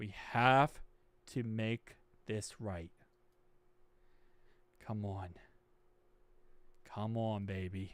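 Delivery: very quiet, hushed voice shaking with nerves. Waiting for the team to announce a player, nervous. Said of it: "I am literally shaking right now".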